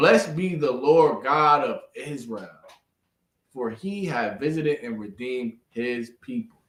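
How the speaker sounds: slow, deliberate reading with every word stressed. Demonstrating a nice slow reading of the passage, slow and emphatic. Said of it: "here we read nice and slow and put emphasis on it".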